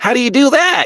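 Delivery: put-on squeaky kid voice.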